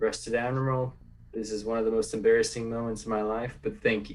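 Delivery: flat, expressionless deadpan delivery. Voicing a character's reply over the comm: deadpan voice. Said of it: "a very deadpan voice just saying".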